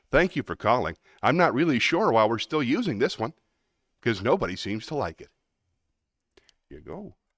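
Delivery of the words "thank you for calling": polished, friendly, professional customer-line phone voice. Demonstrating a tone for e-learning and training modules: welcome to Chase voice. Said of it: "I often call it the welcome to Chase voice".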